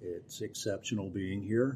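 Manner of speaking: soft, flat-energy deadpan delivery. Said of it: "You can tell by the energy in my voice".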